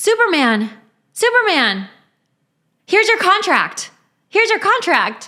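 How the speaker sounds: very high, carefully enunciated, sing-song younger voice. Asked to do a line from Suits, speaking with raised pitch, enunciated. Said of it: "I kind of raise my pitch".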